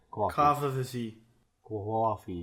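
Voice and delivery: put-on Brooklyn accent and pronunciation. Speaker demonstrating regional pronunciations to co-hosts, in a brooklyn accent. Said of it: "that's Brooklyn".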